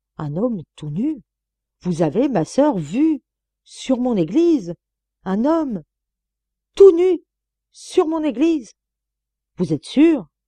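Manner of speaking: high, stuttering, stammering words in shock. The dean questions a sister about what she saw on his church, stammering. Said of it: "Puis il bégaya".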